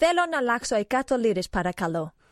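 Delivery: phrase spoken with a Greek accent. Showing off a favourite phrase in Greek to the others: Greek accent. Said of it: "it sounded Greek".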